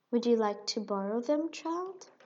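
gentle, soft tone. Narrating a woman's question to a child, asking gently. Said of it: "Madame Zaza asked gently".

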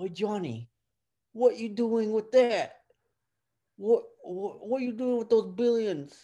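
very high, clumsy, bad put-on Italian accent. Joking in conversation, the speaker addresses johnny in a bad italian accent. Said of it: "That is not an Italian accent".

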